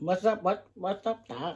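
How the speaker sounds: soft, low-key cartoon rabbit voice. Chatting about character voices, she tries out a Bugs Bunny voice. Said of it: "was that, um, Bugs Bunny?".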